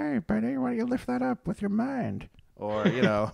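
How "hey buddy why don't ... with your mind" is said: very high, squeaky, creaky put-on voice. Joking about never doing a midi-chlorian impression: midi-chlorians talking to a Jedi. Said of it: "an impression of what the midi-chlorians sound like talking to Jedi".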